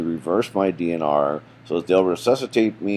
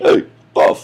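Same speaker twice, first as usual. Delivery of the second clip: booming, very loud New Jersey guy voice and accent. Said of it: "I sound like a New Jersey guy".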